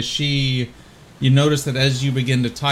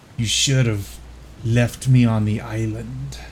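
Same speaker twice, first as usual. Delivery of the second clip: guttural, demonic-sounding voice. Retelling a scene, the speaker voices a red-eyed girl: Candace's guttural voice. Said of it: "you hear a guttural voice of".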